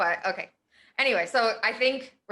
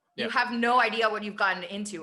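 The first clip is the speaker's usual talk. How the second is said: heartfelt, unafraid, direct, emotional voice. Retelling a character's warning to a villain: imitating Din's emotional delivery. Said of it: "there's so much emotion in his voice".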